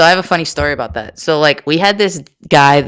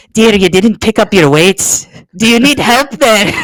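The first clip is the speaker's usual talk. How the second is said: high, fussing, put-on Scottish nanny accent; 7 semitones higher, 4 dB louder than usual. Retelling what a man said while never breaking character. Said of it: "he didn't break character at any point".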